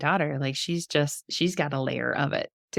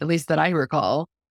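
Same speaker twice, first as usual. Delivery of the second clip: ordinary talk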